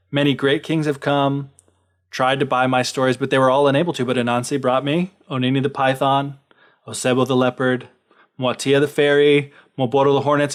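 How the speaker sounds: ordinary talk, nothing marked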